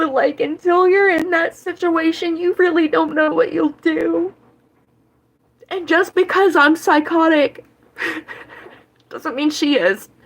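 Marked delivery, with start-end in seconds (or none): 0.0-4.3 tearful speech, talking through tears while crying. Defending their mother, the speaker apologizes for crying and keeps going: crying while talking. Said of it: "I'm sorry, I don't mean to cry".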